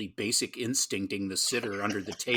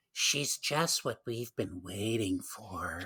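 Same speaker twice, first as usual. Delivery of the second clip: put-on voice with echoing reverb; 4 dB quieter than usual. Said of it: "in his voice, with, like, extra reverb".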